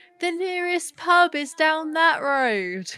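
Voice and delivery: loud shouted calling out. Voicing a character calling after a departing driver: shouting after someone. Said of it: "Dickie shouts after him".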